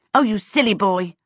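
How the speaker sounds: out of patience. Reading a story aloud, voicing a girl interrupting a boy who won't let her in, impatient. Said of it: "she ran out of patience".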